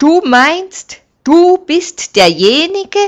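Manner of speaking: loud, very high, scornful sneer. Artassus, a friend of Artam, sneers back at Delaya. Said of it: "Höhnte Artassus".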